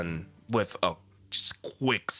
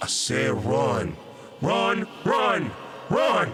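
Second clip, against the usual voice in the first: very slow, drawn-out, high ghostly voice; 5 semitones higher, 4 dB louder than usual. Voicing a figure with a glowing red eye: half ghost, half Marlowe's voice. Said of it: "in this half ghost, half Marlowe's voice".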